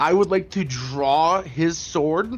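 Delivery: ordinary talk, nothing marked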